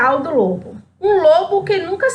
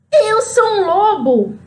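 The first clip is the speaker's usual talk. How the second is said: mild storybook wolf cry; 5 semitones higher than usual. Reading a story aloud, the wolf shouts at Chapeuzinho: shouting with full force. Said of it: "ele então gritou bem forte".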